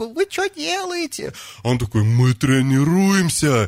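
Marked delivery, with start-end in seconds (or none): 0.1-1.3 very high head-voice falsetto. Retelling questioning someone at two in the morning: high falsetto. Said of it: "так фальцетом такой".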